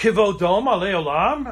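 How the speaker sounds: kivodoma leolam with rising question tune on leolam. Reading a hebrew prayer line aloud in a new way: almost like a question. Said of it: "I'm going to say almost as a question".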